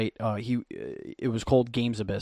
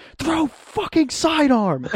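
put-on very high, swooping, top-of-the-lungs scream; 6 dB louder than usual. Retelling how his high school coach screamed at him: retelling a coach's scream. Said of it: "screams at the top of his lungs".

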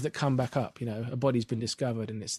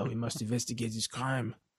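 exaggerated fake French accent, detective style; 4 dB quieter than usual. Describing a British show's French detective, speaker mimics his French-for-English-people accent. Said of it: "got a fantastic sort of French for English people accent".

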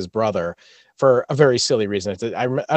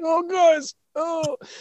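mock straining grunt, pitched much higher. Co-hosts mock how a man always sounded, imitating constipated straining. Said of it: "I always thought he sounded constipated".

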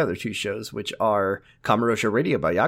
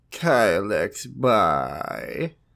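droopy put-on character voice, lower pitch. Asked by another speaker to say the sign-off, in Droopy Mole Man voice. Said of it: "can you say it in Droopy Mole Man voice?".

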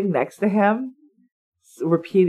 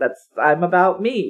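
plain

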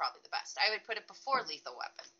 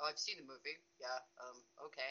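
mock-deadpan, flat, humorless, much lower and quieter; 8 semitones lower, 14 dB quieter than usual. Retelling how the attorney answered about the character, mimicking a deadpan reply. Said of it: "He couldn't have been more deadpan".

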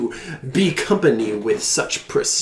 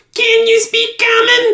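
small creature voice, much higher pitch; 8 dB louder than usual. In the scene, the speaker voices the little creature asking a question. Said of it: "The little creature goes".

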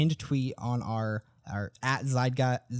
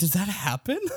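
acted, pitched-up, half-believing surprise; 6 semitones higher than usual. Retelling own reaction to a convincing claim: retelling own surprised reaction. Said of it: "It's like".

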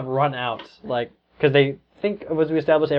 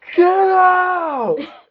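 shrill, very high scream with "out" drawn out; 7 dB louder than usual. Telling someone what they actually screamed out loud, retelling a scream. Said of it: "You screamed".

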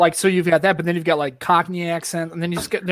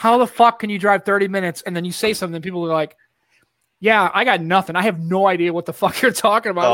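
usual speaking voice

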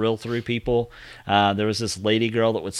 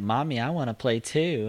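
put-on creepy little kid voice, quieter; 5 dB quieter than usual. Describing a movie's little kid after he turns, creepy little kid voice. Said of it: "just his voice is like".

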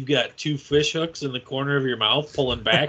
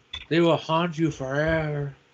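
over-the-top, exaggerated Latin accent. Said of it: "That was Latin John Voight".

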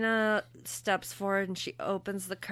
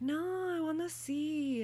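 fake Italian accent, slow and high-pitched; 8 semitones higher, 4 dB quieter than usual. Retelling a story, the speaker quotes a woman's reply in a put-on Italian accent. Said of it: "And it's my Italian accent".

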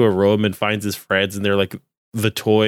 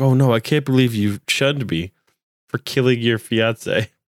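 put-on shocked voice; 2 semitones higher than usual. Retelling a character's reaction after killing a fiance: imitating a shocked character. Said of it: "so shocked".

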